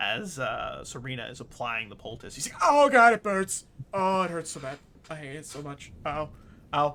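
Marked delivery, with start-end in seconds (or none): 2.6-6.9 very loud, wincing, pained yelps and cries. Narrating his reaction as Serena applies the poultice, mock wincing in pain. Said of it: "a wince of pain".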